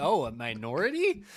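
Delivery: put-on impressed, wooed woman's tone. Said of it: "she's like".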